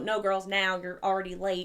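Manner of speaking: firm, stern, scolding mom voice. Retelling how mom ended the game before school: imitating mom voice. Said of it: "had obviously pull her mom voice and go".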